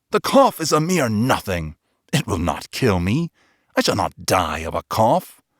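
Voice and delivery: put-on drunk, intoxicated, tipsy voice. Reading the friend's reply to being urged back, drunk. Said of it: "The gait of my friend was unsteady, / and looked into my eyes with 2 filmy orbs that distilled the rheum of intoxication. / "How long have you had that cough?" My poor friend found it impossible to re".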